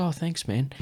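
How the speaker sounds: soft-spoken and very polite. Retelling a hockey player's reply to a pass: imitating someone super polite, soft-spoken. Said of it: "super polite, soft-spoken".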